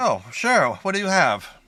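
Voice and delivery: put-on tiny, high elderly gnome woman voice. In a tabletop game, a character asked about curing hides answers as a little old lady gnome. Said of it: "a little old lady gnome".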